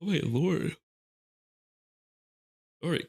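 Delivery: spoken mid-yawn. Explaining game abilities, the speaker breaks off, yawning. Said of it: "Why am I yawning so much?".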